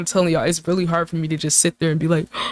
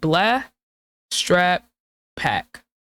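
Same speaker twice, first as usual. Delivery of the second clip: flat, level monotone reading with no emphasis. Showing how the rhyming words sound without emphasis, a flat monotone reading. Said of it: "let me just read it monotone".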